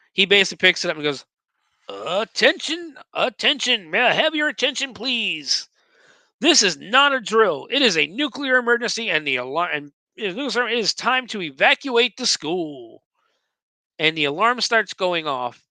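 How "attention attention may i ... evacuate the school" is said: pitched-up, announcer-style game show host voice. Retelling a story, speaker voices Gonzo doing his best: game show host voice. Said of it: "does his best like game show host voice".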